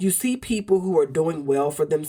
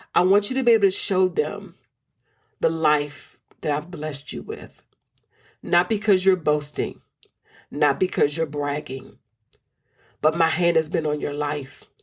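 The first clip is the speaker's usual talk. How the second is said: choked-up voice catching, near tears. Speaker addressing listeners, feeling about to cry: near tears. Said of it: "I feel like I'm about to cry".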